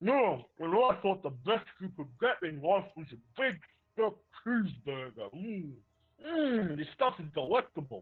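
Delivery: words mushed around a mouthful, chewing while talking. Narrating a game, the speaker voices Dan at a buffet, Dan talking with mouth full. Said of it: "Dan is shuffling his mouth full".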